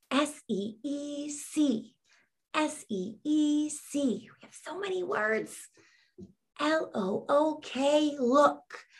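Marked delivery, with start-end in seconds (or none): 0.1-5.5 soft half-whisper, spelling out letter by letter. Leading a spelling practice for young readers, spelling words in a half-whisper. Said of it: "In a whisper voice".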